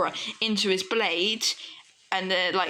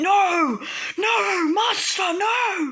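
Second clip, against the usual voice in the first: very high, loud, very slow, drawn-out screaming; 11 semitones higher, 5 dB louder than usual. Retelling a planned story scene where a character sees his master hurt: imitating someone screaming.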